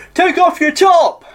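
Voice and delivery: very high-pitched, shrill, loud shouting. Retelling a heckle from one guy in the audience: imitating someone shouting. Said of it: "this one guy shouts out".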